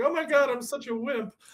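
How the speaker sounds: very high, teary, self-mocking tone. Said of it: "I'm like".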